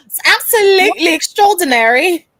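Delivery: put-on British accent. Joking with the others about their British accent: put-on British accent. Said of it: "this British accent that I got".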